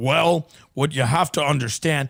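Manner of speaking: low, lecturing, holding-forth voice. Complaining about a sports journalist, the speaker mimics how he talks: imitating his lecturing tone. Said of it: "He gets in a tone and he's like".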